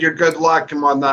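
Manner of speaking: normal talking voice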